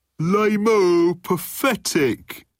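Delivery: very high jeering shout, "lame-o" drawn out. A voice from the crowd jeering at the show, shouting heckler. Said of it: "shouted a voice from the crowd".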